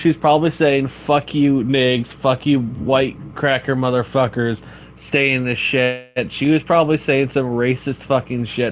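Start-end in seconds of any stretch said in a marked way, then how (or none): none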